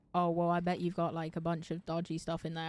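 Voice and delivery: ordinary talk, nothing marked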